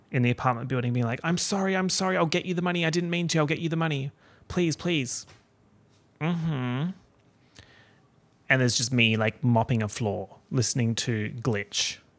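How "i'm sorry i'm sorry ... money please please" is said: mock frantic, high, desperate begging tone. Retelling someone in an alleyway begging up to a balcony: imitating someone begging. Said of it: "begging up to the balcony".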